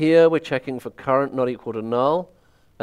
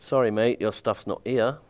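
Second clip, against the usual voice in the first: put-on English accent; 3 semitones lower, 4 dB quieter than usual. Explaining a search loop in code, the speaker puts on an english accent. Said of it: "That's my English accent".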